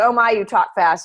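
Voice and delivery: ordinary talk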